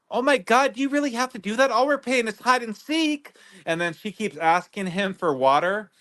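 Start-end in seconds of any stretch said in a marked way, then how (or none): 0.1-3.3 high-pitched put-on imitation of a woman's voice. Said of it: "Sarah's like".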